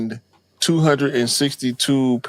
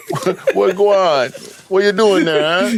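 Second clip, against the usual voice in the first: put-on Jamaican accent, loud and raised; 8 semitones higher, 5 dB louder than usual. Acting out police bursting in on a man caught with fakes: jamaican accent. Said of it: "for our Jamaican accent".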